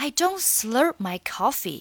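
slow, deliberate, careful model reading.

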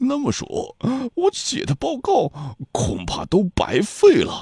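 high, slow, trembling voice.

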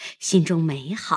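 ordinary delivery

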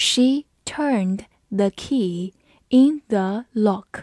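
careful, clear, read-aloud delivery. English vocabulary lesson, reading an example sentence aloud in a slow, careful way. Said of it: "我们慢读一遍。".

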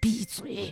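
quiet put-on whispering. Retelling a stage mishap, quietly telling a panicked actress: imitating a very soft whisper. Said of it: "特别轻声的用我的语音说了一句".

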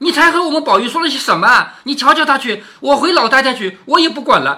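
high, loud, furious scolding tone. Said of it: "直截了当的当着林黛玉的面骂了紫娟".

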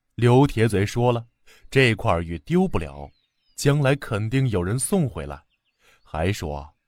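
ordinary delivery

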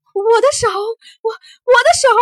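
very high, very loud, shrill pained yell. A man cries out in pain as something enters his wrist. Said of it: "他痛得大叫起来".

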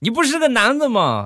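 put-on very high, irate old man voice. Retelling how an old man reacted to the speaker's shout, imitating an angry old man. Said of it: "大爷当时就火了".

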